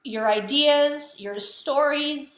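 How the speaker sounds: high, slow choked-up voice, catching with emotion. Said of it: "I'm getting totally choked up".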